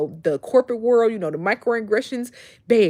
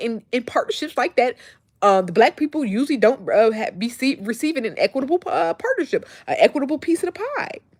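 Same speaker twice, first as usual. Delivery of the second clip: rushed, rapid-fire, words tumbling out too fast; 4 semitones higher than usual. Speaker recounting what he said about partnerships, talking too fast. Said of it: "look at me talking too fast".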